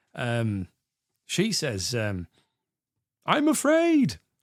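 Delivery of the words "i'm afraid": high-pitched mock shout. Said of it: "the woman shouts out that she's afraid".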